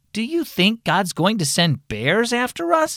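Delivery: high-pitched, trembling, wavering, quivering voice. Reading a story aloud, a child asks Mom a question in a quivering voice. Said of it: "Peter asked in a quivering voice".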